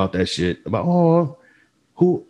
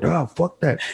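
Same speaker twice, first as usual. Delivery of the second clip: high, hushed, flat half-whisper; 6 semitones higher, 3 dB quieter than usual. Retelling a quiet exchange with the bartender: retelling a half-whisper. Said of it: "me and her are whispering".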